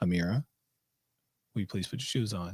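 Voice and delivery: low, very quiet, measured, methodical delivery. A parent shows how she asks her child to put shoes on: lower, more methodical. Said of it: "my voice goes a little bit lower and a little bit more methodic".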